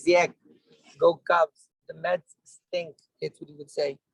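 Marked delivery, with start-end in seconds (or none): 0.0-2.9 slow Chicago way of talking. Speaker recalls what their grandfather used to say, grandfather's chicago accent. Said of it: "I can do my grandfather talk used to talk like this".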